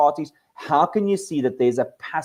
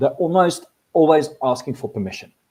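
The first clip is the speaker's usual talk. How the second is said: ordinary delivery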